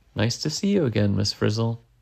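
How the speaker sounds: usual speaking voice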